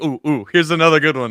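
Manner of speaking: normal talking voice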